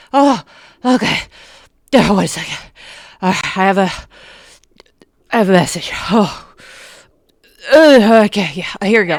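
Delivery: winded, huffing, puffing between words. Voicing a portly fellow arriving from running: huffing and puffing. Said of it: "while he's huffing and puffing".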